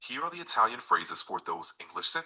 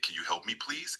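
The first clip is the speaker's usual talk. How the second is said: ordinary delivery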